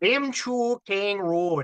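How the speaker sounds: Minnesotan accent. Reading a haunted road's name aloud again: Minnesotan accent. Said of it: "I gotta do this with a Minnesotan accent".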